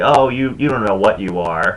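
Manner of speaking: normal talking voice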